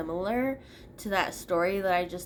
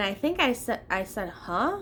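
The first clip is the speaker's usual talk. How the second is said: plain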